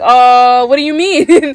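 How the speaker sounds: put-on panicked voice. Retelling a scene where Blitz panics: imitating Blitz freaking out. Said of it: "Blitz starts freaking out".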